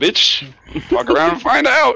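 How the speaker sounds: very high, loud put-on battle-cry yell. Casting a spell in a game, yelling at the enemy: in-character yell. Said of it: "I'm yelling, like".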